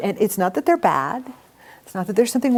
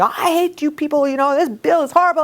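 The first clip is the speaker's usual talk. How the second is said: mock screaming and yelling, much higher pitched; 6 semitones higher than usual. Describing someone who walks into the office angry; imitating a screaming office visitor. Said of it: "and they're screaming".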